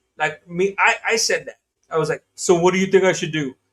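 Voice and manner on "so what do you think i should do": smartass sarcastic tone, louder. Retelling own question to another speaker: imitating own sarcastic question. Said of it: "I was literally being a smartass".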